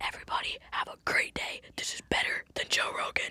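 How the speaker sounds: very quiet, breathy, barely audible whisper. Podcast hosts record one more outro together, whispering. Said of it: "but we whisper".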